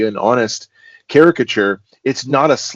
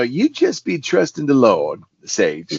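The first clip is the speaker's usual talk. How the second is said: quaint, sing-song character voice with easy swing; 3 semitones higher than usual. Describing a character from his series, quoting how he talks: Jasper's voice. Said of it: "he talks like that".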